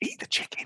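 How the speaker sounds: hushed, breathy, barely voiced whisper. Retelling a film line as the characters would have said it: imitating a whisper. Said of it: "them whispering".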